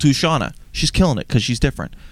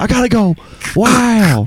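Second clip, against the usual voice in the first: put-on laid-back awed voice, higher and louder; 10 semitones higher, 5 dB louder than usual. Pretending Owen Wilson joined the call, answering a question: Owen Wilson voice. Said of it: "You sound a bit different to me, Owen".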